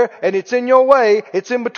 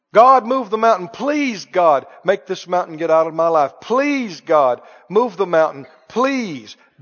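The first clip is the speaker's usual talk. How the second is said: put-on imploring, begging tone, repeated over and over; 3 semitones lower than usual. Acting out how people pray about a problem: imitating someone begging and pleading. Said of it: "Begging and pleading".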